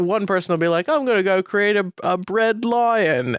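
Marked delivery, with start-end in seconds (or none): 0.9-3.4 put-on British accent, pitched up. Describing what bakers say on a baking show: Great British Baking Show contestant accent. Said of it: "I apologize to everybody from the Kane and Rince podcast for that accent".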